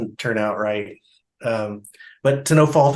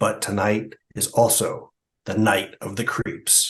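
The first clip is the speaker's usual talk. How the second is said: dramatic, epic movie-trailer announcer voice; 3 semitones lower, 4 dB quieter than usual. Speaker narrates a movie trailer: dramatic movie-trailer announcer voice. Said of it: "I tried to do my best trailer voice".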